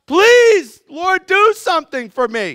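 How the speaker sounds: very high, drawn-out cry at full lung power. Asking listeners if they ever cried out in prayer, acting out a yelled prayer. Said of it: "Like yelling at the top".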